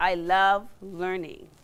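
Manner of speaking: love leaned on with a falling tune.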